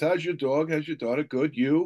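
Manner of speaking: put-on New Jersey accent. Speaker shows how they talk after days visiting a client in Asbury Park, New Jersey accent. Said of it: "I'm talking like this".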